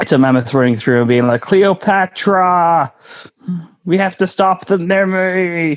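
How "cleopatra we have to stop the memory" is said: very slow, pitched-up delivery, every word drawn out. Imitating a mammoth in a joke about the films: Ray Romano impression. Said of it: "That's my Ray Romano impression".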